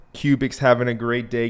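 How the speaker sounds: normal talking voice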